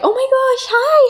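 put-on very high, squeaky, girlish helium voice. Describing types of girls' voices, imitating one in a super high helium voice. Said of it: "Like super high helium".

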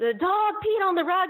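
put-on, very high scream at the top of the lungs. Retelling how she screamed across the house to the speaker's father, imitating her screaming. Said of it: "she screams to him".

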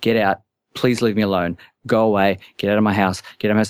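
mock panicked voice. Speaker re-enacts their own words to a woman: retelling panicked pleading. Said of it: "Like having a legit panic attack".

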